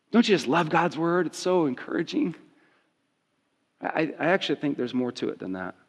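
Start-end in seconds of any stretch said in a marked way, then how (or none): 0.1-2.3 tongue-in-cheek, sarcastic mock enthusiasm. Reading a bleak bible verse to listeners, then praising it: sarcastic. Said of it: "I'm being sarcastic".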